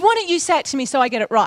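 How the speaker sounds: ordinary talk, nothing marked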